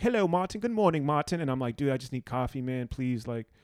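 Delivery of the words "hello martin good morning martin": put-on English-accented voice. Retelling how he was greeted each morning in the hotel room, english accent impression. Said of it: "he goes back into like English guy".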